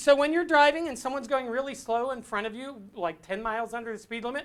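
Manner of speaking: ordinary talk, nothing marked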